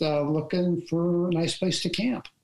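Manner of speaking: ordinary talk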